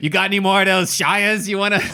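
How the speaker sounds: put-on loud, old-fashioned 1950s-style New York accent. Improvising a shady new zealand prime minister character: 1950s new york accent. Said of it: "You sound like 1950s New York".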